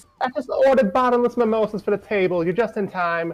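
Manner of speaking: very high, loud, bad New York accent. Reading Redhead's line from a fanfiction aloud, attempted New Yorker accent. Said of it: "This is not a New York accent".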